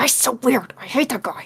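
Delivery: muttering under breath. Voicing a character commenting on a departing figure: muttering under his breath. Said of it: "under his breath, goes".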